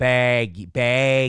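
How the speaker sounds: Midwestern pronunciation of "baggy". Answering a chat comment about shirt size, repeating the word: Midwestern accent. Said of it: "That's that Midwestern accent".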